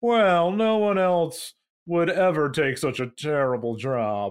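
put-on snooty frat guy voice. Retelling what the man said when asked why he was sent there, imitating a snooty fraternity guy. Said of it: "He talked like he was in a snooty fraternity".

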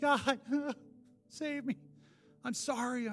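crying, pleading voice. Retelling a prayer at the altar: imitating own past crying prayer. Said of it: "Be up at the altar crying again".

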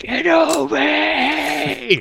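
mock yelling. Describing a scene from a show, acting out a character's yell. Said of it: "he's just yelling".

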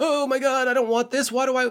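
high, outraged, upset voice. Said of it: "people get so like".

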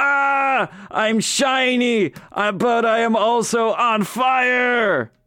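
very high, drawn-out scream of intense pain. Voicing a character whose feet are set on fire: character screaming while on fire. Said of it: "he starts screaming".

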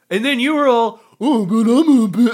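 very slow, loud, dopey dim-witted drawl. Retelling how an ex mimicked them in a dumb voice: imitating a dumb voice. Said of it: "they give you the dumb voice too".

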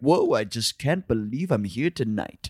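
low, posh, moneyed put-on rich-guy voice. Wondering if getting rich changes how people talk, rich guy voice. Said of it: "when you get rich, do you just start talking like that".

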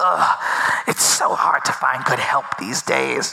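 pained, creaky groaning through the words. Voicing a dying foe as he expires: loud groaning. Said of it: "you hear a loud groaning noise".

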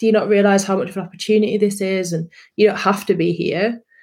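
normal talking voice

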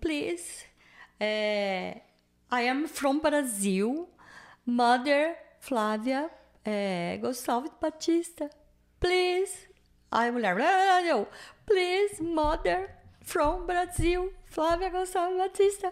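crying, begging, high, with drawn-out eh. Speaker retells an hour spent saying only this, retelling a tearful plea. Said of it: "Eu fiquei uma hora falando só isso, chorando".

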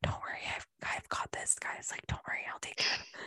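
very hushed, soft, reassuring whisper. Retelling a mother reassuring the scared kids: imitating someone whispering. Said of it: "whispering to the kids".

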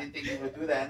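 soft, quiet, whispered put-on voice. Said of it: "He's whispering".

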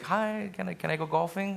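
acted, fake, very sweet and pleasant voice. Recalling asking his wife for something, in a put-on very pleasant voice. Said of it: "in a very pleasant voice".

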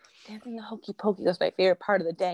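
whispered voice. Recalling what they told their child at bedtime, retelling a whisper. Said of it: "I whispered".

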